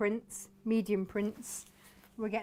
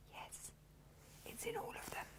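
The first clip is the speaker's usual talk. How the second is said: soft, gentle, hushed whisper. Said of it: "I don't know why we're whispering".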